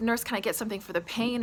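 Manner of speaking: normal talking voice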